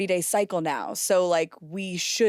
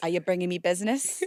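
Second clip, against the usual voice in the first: put-on woman's New York accent. Retelling how a former coworker always asked about business: imitating coworker's New York accent. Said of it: "sounding a bit like a New York accent".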